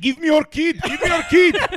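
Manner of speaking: loud, very high put-on Arabic accent. Speaker imagines how their dad would say it, in an arabic accent imitating dad. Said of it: "Speaking English in an Arabic accent".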